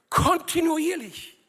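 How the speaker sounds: high, loud, slow, stressed kontinuierlich. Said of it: "Die Betonung liegt auf kontinuierliche".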